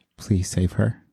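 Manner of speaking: very soft, pleading voice. Voicing a character begging the others to save her: very soft pleading voice. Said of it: "all you hear from [name] in a very soft voice".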